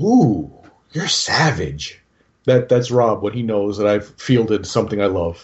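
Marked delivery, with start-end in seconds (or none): 0.0-2.0 put-on slow, drawn-out sinister coo. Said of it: "would look at someone and go".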